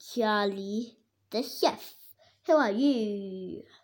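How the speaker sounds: ordinary delivery, nothing marked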